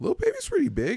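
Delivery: very high, squeaky-sounding voice. Answering the other speaker about how big an artist is: high-pitched voice. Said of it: "you said that with a high-pitched voice".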